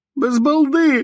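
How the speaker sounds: pitched very high, screaming in terror. Narrator reads a man's plea with revolvers pointed at him, shouting. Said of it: "кричав він".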